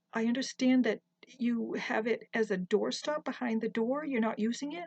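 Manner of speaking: ordinary delivery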